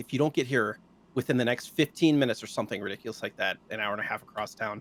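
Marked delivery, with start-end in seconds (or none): none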